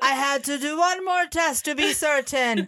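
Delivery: terrible, bad Scottish accent. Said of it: "terrible Scottish accent for you".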